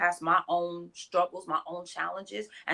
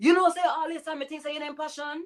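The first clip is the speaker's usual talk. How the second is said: high-pitched Jamaican patois voice; 9 semitones higher than usual. Retelling what a friend said about her name: imitating Jamaican patois. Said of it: "for those of you who don't understand patois".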